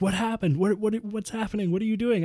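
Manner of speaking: very high, frantic, confused, panicked voice. Retelling how a lady reacted when her dog vanished: imitating a freaking-out lady. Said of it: "she's freaking out".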